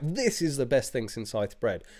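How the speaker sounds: fake, eager, oversold enthusiasm. Retelling walking into the living room offering a beer: retelling own fake enthusiasm. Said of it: "You've gotta be like".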